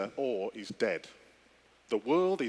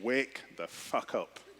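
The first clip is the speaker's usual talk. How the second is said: slow, hushed, muttered whisper under the breath; 3 dB quieter than usual. Speaker retelling their answer to someone's question, whispered under breath. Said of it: "I whispered under my breath".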